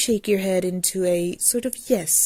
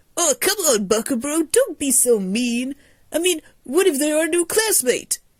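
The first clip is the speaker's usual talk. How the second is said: ecstatic, high, over-cheerful, almost too happy gush; 7 semitones higher, 3 dB louder than usual. A character tells another not to be so mean: ecstatic, almost too happy. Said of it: "His energy seems to be ecstatic, happy, and almost too happy".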